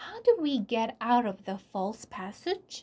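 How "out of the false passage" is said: ordinary delivery, nothing marked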